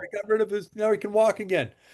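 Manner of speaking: acted, emotional, tearful, high-pitched crying. Retelling a man's phone call about his dog, imitating him crying. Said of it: "And he's crying".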